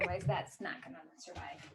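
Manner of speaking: very quiet, hushed whisper. Switching the internet before recording, speaking in a whisper. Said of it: "I love how you're whispering".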